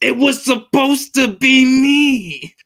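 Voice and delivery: very high, very slow stretched-out drawl. Talking about wrestling matchups, doing a Dolph Ziggler voice. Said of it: "In my Dolph Ziggler voice".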